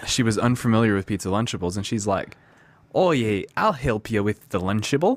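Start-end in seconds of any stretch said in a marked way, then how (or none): 2.9-5.2 put-on Australian accent. Retelling what a woman said about a pizza Lunchable, in an Australian accent. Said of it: "How's that accent?".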